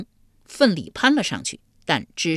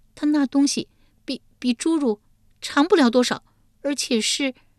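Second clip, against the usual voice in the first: faltering, stop-start, halting stammer, pitched up; 10 semitones higher than usual. A woman answers the King of Hell's question, hesitant and stammering. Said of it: "玉莲吞吞吐吐回道".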